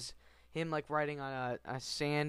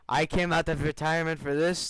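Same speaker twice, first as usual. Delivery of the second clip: terrible put-on Arabic accent; 5 dB louder than usual. Commenting on a game cutscene, imagining Salim's words in a terrible Salim Arabic impression. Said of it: "That's terrible Arabic impression".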